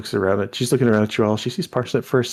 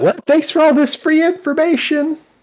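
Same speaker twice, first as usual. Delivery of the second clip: shrill, very high, loud yell; 4 dB louder than usual. Voicing Miss Calamity thanking a player for free information: loud shout. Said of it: "she shuts out".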